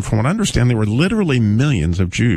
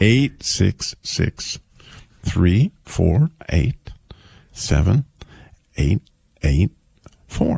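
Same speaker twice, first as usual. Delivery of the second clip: slow, much lower pitch; 4 semitones lower than usual. Giving callers a phone number after being asked to go slow, saying it slowly. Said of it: "But you can go slow".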